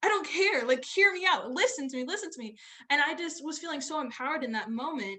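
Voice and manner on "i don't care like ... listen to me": loud, raised, angry shout. Retelling speaking to a crowd through a megaphone: retelling own angry screaming. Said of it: "I'm screaming in this megaphone".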